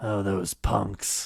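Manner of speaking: totally unfazed, calm, cool, unruffled tough-guy voice. Imagining what the driver said after the egg hit: Dirty Harry voice. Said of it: "They all sounded like Dirty Harry".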